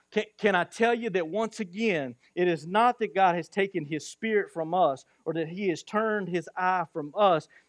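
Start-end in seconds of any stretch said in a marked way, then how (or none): none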